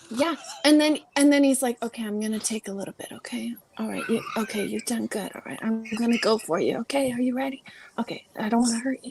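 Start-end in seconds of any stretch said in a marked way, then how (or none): 1.8-9.1 mimicked whispering voice. Recounting what a man said to the speaker, imitating someone whispering. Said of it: "but then somebody out-whispered him".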